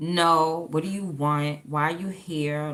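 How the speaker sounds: put-on disgusted dismissive tone. Acting out how the high priestess answers when he calls: imitating a disgusted woman. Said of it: "she's disgusted by him".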